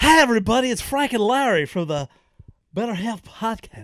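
very loud, booming, high put-on voice at full blast. Greeting listeners at the start of the episode: Harry Caray impression. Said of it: "That was my impression of Harry Carey".

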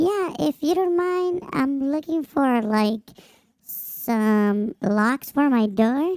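thin, very high-pitched voice. Retelling a woman asking the speaker for door locks, imitating a high-pitched voice. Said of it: "she had a very high-pitched voice".

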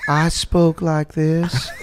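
slow Southern belle drawl. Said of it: "Can you do the voice?".

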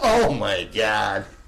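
mock half-embarrassed outburst. Speaker retells her reaction on hearing The Funhouse: retelling a half-abashed exclamation. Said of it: "kind of half abashed".

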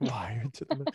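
soft, whispered phrase.

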